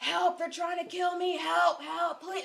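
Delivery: very high, loud, bloody-murder screaming. Retelling a man running down the street on a Saturday night, retelling screaming for help. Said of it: "as loud as he fucking could".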